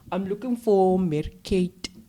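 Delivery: put-on Afrikaans accent. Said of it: "he mimics this other Afrikaans voice".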